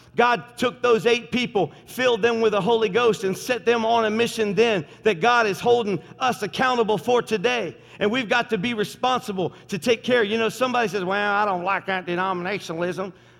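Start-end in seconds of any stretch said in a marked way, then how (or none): 11.3-13.1 put-on Tennessee-style country accent. Speaker quoting what somebody says, in a country accent. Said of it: "I should not do it country".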